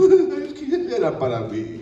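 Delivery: mock whiny wail, very slow, drawn out, swooping high. Telling a hypothetical about god, the speaker acts out the person's reaction: mock whining. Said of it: "ahí está Alejandro chillando".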